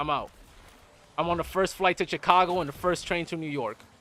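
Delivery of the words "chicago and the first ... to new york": normal talking voice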